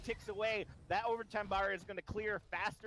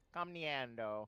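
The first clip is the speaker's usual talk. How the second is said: put-on Italian-accented pronunciation, lower pitch; 7 semitones lower than usual. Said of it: "I forever will now have an Italian acce-".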